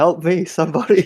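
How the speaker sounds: high, pleading, mock yelling. Joking about another speaker at the gym: mock yelling for help. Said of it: "He's yelling out in the gym".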